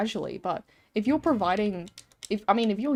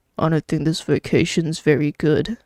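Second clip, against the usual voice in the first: close-miked, voice-chat speech right into mic; 5 semitones lower, 8 dB louder than usual. Retelling a reactor's comment, imitating someone talking right into the mic. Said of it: "He goes into his mic like this".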